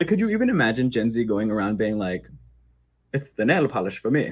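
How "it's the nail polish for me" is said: put-on Mid-Atlantic accent impression. Imagining a Gen Z person saying a modern phrase in a mid-Atlantic accent. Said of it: "mid-Atlantic accent".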